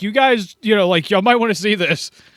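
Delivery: loud, high-pitched shouting call-out. Voicing a character calling the others over from a cave: screaming out. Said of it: "He screams out in the cave".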